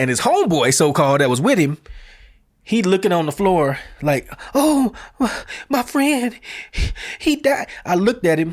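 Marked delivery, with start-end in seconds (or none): 4.5-7.7 very high, slow, drawn-out fake sobbing. Retelling what a friend of a fallen man said: imitating someone fake crying. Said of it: "the dude was fake crying".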